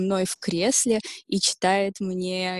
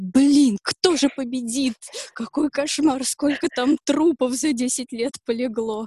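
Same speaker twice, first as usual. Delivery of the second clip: high, gripped, swept-up reaction; 5 semitones higher, 4 dB louder than usual. Advising a friend how to read the Iliad with feeling, acting out a reader's reaction. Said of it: "Ты такой".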